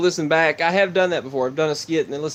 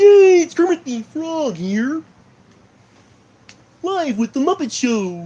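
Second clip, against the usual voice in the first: loud, swooping, very high voice; 12 semitones higher, 5 dB louder than usual. After the Muppet Show came up, the speaker tries a Kermit the Frog voice. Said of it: "so I'm going to try to do Kermit the Frog".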